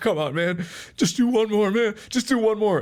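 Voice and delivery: very high, sobbing, pleading crying voice. Retelling a video of a kid in a car: imitating someone crying. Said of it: "this kid sitting in a car and he's crying".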